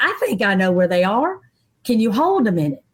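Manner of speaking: plain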